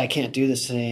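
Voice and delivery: put-on tearful, mock-devastated pleading voice. Retelling what a girl walking into the treatment center said: imitating someone in tears. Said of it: "She's just devastated".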